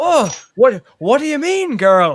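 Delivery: put-on loud, booming, slow Scottish accent. Quoting Donald Pleasence's line from the film Phenomena: Donald Pleasence Scottish accent. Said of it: "Awesome Scottish accent".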